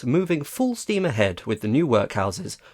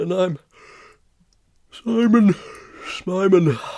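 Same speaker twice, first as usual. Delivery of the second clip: pitched-up, stretched-out words through a yawn; 5 semitones higher than usual. A news co-presenter introduces themselves live on air while yawning. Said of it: "Why are you yawning?".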